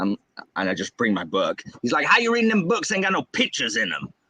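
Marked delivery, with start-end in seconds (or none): 2.0-4.1 put-on thick Southern accent, teasing tone. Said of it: "that's how my dad talks".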